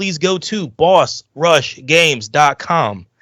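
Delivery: very slow, deliberate, each word drawn out. A podcast host tells listeners the website to find the network, said slowly. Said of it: "I said it slow".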